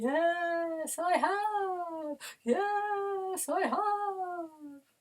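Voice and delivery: very high, stretched-out ghostly wailing voice. In a voice warm-up, answering the call for a ghostly voice. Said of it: "Have you brought your ghostly voice?".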